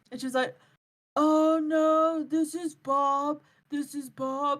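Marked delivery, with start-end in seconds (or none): 1.1-4.6 very slow, pitched-up fake old man voice. Retelling how someone answered a phone call pretending to be someone else: fake old man voice. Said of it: "in like an old man voice".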